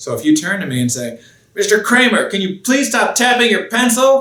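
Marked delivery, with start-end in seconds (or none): 1.5-4.2 irritated, angry voice, very high-pitched. Speaker demonstrating an example of using the wrong tone; angry voice. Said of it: "but you use an angry voice".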